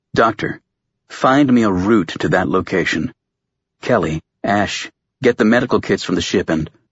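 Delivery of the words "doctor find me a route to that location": ordinary delivery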